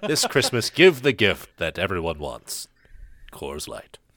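loud commercial radio announcer delivery. Speaker performs a made-up Christmas beer commercial, best radio voice. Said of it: "let me get my best radio voice here".

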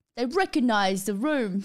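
put-on British English accent. Rereading a line of the story aloud in a british accent. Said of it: "I've forgotten to do the British accent".

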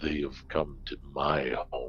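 deep, low, hushed, disembodied voice. The narrator voices the wall speaking to the players in a deep voice. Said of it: "that deep voice emanating from the wall says".

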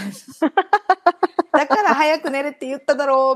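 play-acted, slow, furious, angry voice with rolled r's. Retelling snapping at someone this morning: imitating angry rolled-tongue scolding. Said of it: "巻き舌で言ってた".

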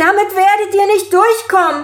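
very high, shrill, loud scream. As her, answering the man who has just spoken, screaming at him. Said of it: "schrie sie ihn an".

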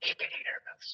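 hushed, very quiet background whisper. Retelling a voice heard in the background: imitating a whisper. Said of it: "somebody in the background whisper".

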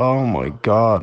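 mock weepy crying voice. Mocking someone crying after a finger in the eye: mock crying. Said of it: "sit there and cry about it".

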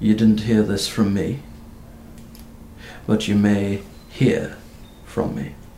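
quiet, secretive dropped voice. Game master voicing a character who lowers his voice again: lowered hushed voice. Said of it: "lowers his voice once again".

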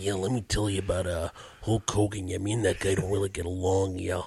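low-pitched, toned-down, dialed-back persona voice. Imitating how a wrestler talked out of character: toned-down Randy Savage voice. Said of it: "he's still Randy Savage".

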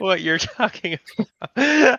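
talking through laughter, pitched way up, loud. Telling a story he calls serious while a listener asks why he laughs, laughing while talking. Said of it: "why are you laughing".

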